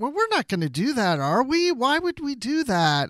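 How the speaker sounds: acted high whining. Speaker describing a man who seemed whiny, quoting him: mimicking a whiny man. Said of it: "he seemed like a little whiny".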